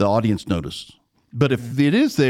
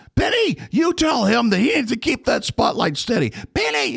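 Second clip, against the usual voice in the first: put-on yell, higher pitch; 12 semitones higher than usual. Retelling how the director yelled up at the booth: imitating a director yelling. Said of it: "he would yell up at the booth".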